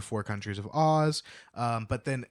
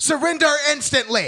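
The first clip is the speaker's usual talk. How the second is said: shrill shriek, very high and very loud; 14 semitones higher, 9 dB louder than usual. Retelling a book scene where Ginger demands the gate surrender: imitating Ginger screaming. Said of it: "And Ginger screams".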